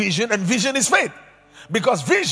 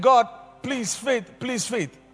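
mock tearful, crying, pleading voice. Acting out going back to God crying again: mock crying prayer. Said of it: "went back to God crying again".

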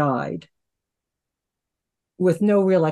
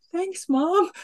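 much higher-pitched put-on voice. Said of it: "then I was like".

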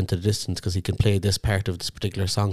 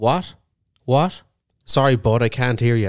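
put-on dismissive voice, higher and louder; 4 semitones higher, 5 dB louder than usual. Imitating Tom turning away someone who talks to him on stage: imitating Tom brushing someone off. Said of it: "He just goes".

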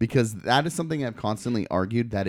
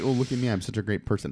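usual speaking voice

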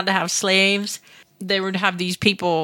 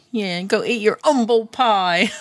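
put-on northern English accent. Chatting with a friend about umble pie, in a put-on northern english accent. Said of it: "Why did you sound like you were like northern?".

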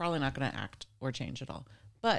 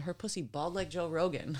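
normal talking voice

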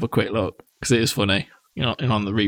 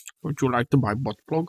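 put-on thick Russian accent, quieter; 3 semitones higher than usual. Joking on a podcast about a YouTuber's subs, Crazy Russian Hacker impression, thick accent. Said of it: "Thick Russian accent".

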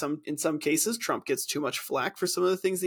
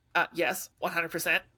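higher-pitched, nasal put-on voice. Redoing the line after being asked for a higher, more nasal voice: higher, more nasal Ben Shapiro voice. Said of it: "half an octave higher and a little more nasally".

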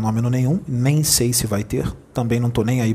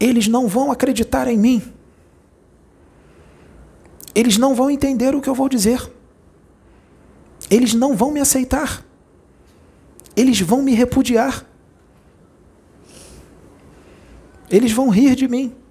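put-on very high little-child voice; 13 semitones higher, 4 dB louder than usual. Speaker retells answering the blond leader who spoke to them: child's voice. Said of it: "com a voz de criança".

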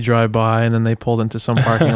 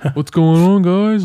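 laid-back, easygoing bro voice, pitched up; 8 semitones higher, 4 dB louder than usual. Retelling how a relaxed police officer greeted the group: imitating a chill bro cop. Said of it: "just broing up".

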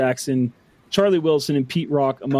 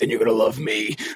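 deep, low superhero voice; 4 semitones lower than usual. Retelling a Dark Knight scene where Batman shows up, in a Batman voice. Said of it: "I've just been doing the Batman voice".

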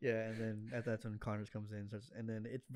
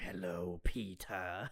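menacing villain voice, lower; 3 semitones lower than usual. Retelling a movie scene, quoting the villain to Peter: menacing Lizard voice. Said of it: "they're all, like, menacing voices".

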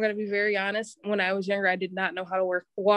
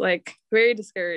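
usual speaking voice

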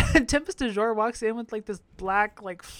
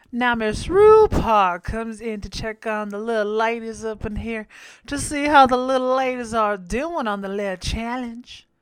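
playful, put-on Southern drawl; 4 dB louder than usual. Recapping a challenge episode, slipping into a put-on southern accent. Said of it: "I don't know why the fuck I'm speaking like that".

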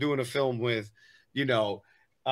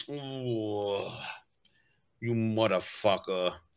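low, hushed mafioso tough-guy voice, long ugh; 4 semitones lower, 6 dB quieter than usual. An actor often cast as the bad guy shows that role: mafioso voice. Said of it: "that like mafioso role".

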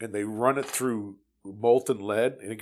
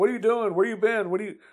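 play-acted, very high-pitched, worked-up rapid-fire delivery; 11 semitones higher than usual. Retelling how an officer reacted seeing him carry gear into camp: imitating an excited officer. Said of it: "He gets all excited".

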